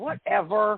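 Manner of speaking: sarcastic, dismissive eye-roll tone. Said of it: "most teenagers said with eye".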